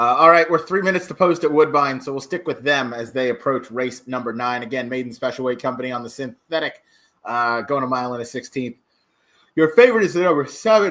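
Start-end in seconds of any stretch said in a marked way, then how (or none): 9.6-10.9 raised, higher-pitched speech through a yawn. A race caller giving the favorite before a race, yawning while talking. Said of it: "I'm yawning".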